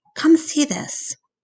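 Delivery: high, hushed whisper. A narrator reads a daughter calling her father over, whispering. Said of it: "she whispers".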